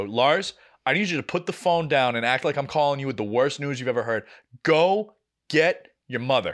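ordinary talk, nothing marked

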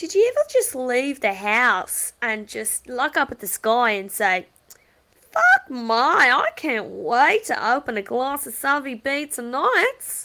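put-on unhurried, loud, swooping Australian woman's accent. Imitating an Australian woman from TikTok videos: imitating an Australian woman from TikTok. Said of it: "that's exactly how she sounds".

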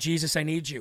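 imitated whisper. Retelling a prayer in the night, imitating own whisper. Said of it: "That's when I whispered".

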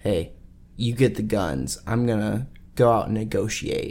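hushed, conspiratorial whisper. Retelling what a character says quietly to Arthur: imitating a whisper. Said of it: "whispers to Arthur".

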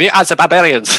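put-on German accent. Retelling how the German barbarians announced themselves, in a German accent. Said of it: "German barbarians who was like".

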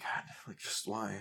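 soft, breathless, exasperated whisper in disbelief.

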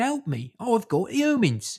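high, drawn-out, wailing scream. Acting out Mother Earth screaming for help: imitating Mother Earth screaming. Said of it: "She's screaming".

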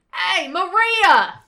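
very high, very loud, shrill yell. Acting out a family member calling upstairs: yelling across the house. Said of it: "don't yell at me".

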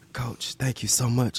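secretive, soft, hushed whisper. Retelling answering the coach's draft-day call at graduation, imitating a whisper. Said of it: "I had to whisper".

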